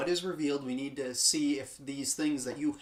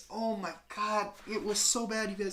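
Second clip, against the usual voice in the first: emotional, pitched-up, near-tears lament; 6 semitones higher than usual. Ranting to the audience about a bad final twenty minutes, getting emotional. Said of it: "I'm getting emotional talking about it".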